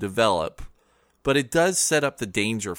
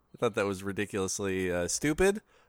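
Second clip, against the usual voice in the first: normal talking voice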